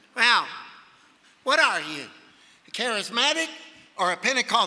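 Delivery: acted, haughty, superior, arrogant, condescending tone. Retelling the question a woman asked him, mimicking an arrogant woman. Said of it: "she said in a really arrogant voice".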